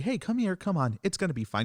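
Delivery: honeyed, coaxing high voice.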